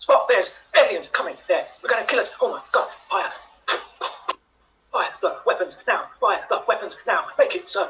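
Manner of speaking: fast, loud, rattled-off delivery. In a group improv game, perform Captain Kirk speaking fast. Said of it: "Captain Kirk, speaking fast".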